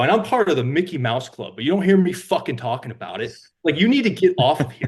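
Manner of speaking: mock furious, loud, angry snapping delivery. Retelling finally snapping at a man who kept saying he's in the men's club, retelling an angry snap. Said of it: "And I snapped".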